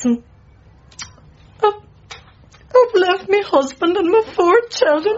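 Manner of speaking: very high, slow, weeping words through tears. Answering a listener's questions about her past, crying while speaking. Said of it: "now you just stop crying now".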